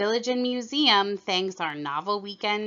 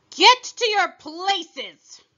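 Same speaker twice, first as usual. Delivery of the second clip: very high, thundering shout; 10 semitones higher, 8 dB louder than usual. The Queen shouts to the people around her, a thundering shout. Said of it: "shouted the queen in a voice of thunder".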